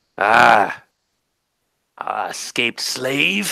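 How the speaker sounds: guttural, ground-out delivery, very slow. A game master voices a character hunting an escaped slave: guttural muttering. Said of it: "he mutters in common, in his guttural common".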